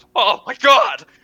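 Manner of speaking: panicked, freaking-out character voice. Voicing a character who narrowly dodges a trident: character freaking out. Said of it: "And he's freaking out".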